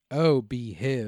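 groovy British spy voice. Reading out an HIV prevention definition, in an Austin Powers impression. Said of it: "Spot on impression".

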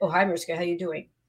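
not genuine, pitched way down. Showing how a greeting sounds when it does not come across as genuine: insincere-sounding greeting. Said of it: "as opposed to".

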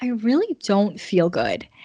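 slow and weepy, crying through the words. Retelling what she told him on the phone, saying it while mock-crying. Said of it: "And I started crying".

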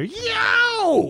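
fake awkward yelling. Imitating a candidate's awkward yell after losing a primary: bad Howard Dean scream impression. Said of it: "Forgive that bad impression".

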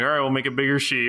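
mock-exasperated tone. Retelling the technical guy's reply to a request: mock-exasperated. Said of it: "with this exasperated tone".

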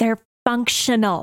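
harsh, rasping whisper. Player looks a woman right back in the eyes after her side-eye: harsh whisper. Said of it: "like harshly whisper".

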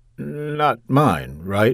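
halting, hesitant, uncertain delivery. After she tells him she's pregnant, he answers her, hesitant. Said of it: "he said hesitantly".

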